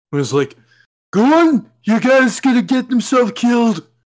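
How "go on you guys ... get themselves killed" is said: very high, loud, goofy hammed-up put-on voice. Imitating a movie character who talked to Batman, in a funny voice. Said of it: "had the funny voice to talk to Batman".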